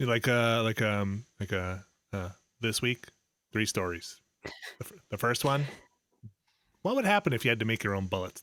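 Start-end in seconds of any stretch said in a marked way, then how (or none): 2.6-8.4 public radio host voice. Imitating a public radio host introducing the week's stories: Ira Glass impression. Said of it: "That's my Ira Glass".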